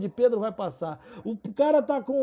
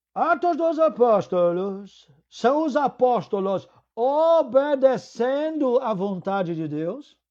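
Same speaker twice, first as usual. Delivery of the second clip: put-on, very slow European Portuguese accent, English mixed in. Retelling what he said to the seminarians, imitating a Portugal Portuguese accent mixed with English. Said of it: "com aquele sotaque de um português de Portugal com inglês".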